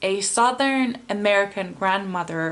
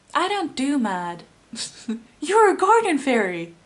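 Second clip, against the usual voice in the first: put-on American accent in a pitched-up cartoonish voice; 6 semitones higher than usual. Quoting a TikTok sound, the speaker does the garden fairy's accent from Tinkerbell. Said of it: "the same accent as in one of Tinkerbell's friends".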